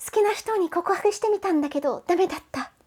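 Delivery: put-on very high, cute anime-girl voice. Speaker explaining Japanese phrases, reading an example sentence as a moe anime-girl impression. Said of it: "that was my best moe impersonation".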